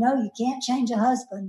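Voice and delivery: ordinary talk, nothing marked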